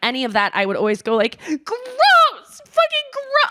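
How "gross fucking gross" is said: very high-pitched screaming and crying. Retelling how she reacted as a child: imitating own screaming. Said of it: "I would scream and cry".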